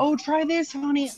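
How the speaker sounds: mock sweet voice, high and sugary.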